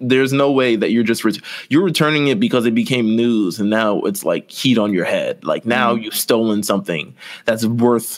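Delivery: ordinary talk, nothing marked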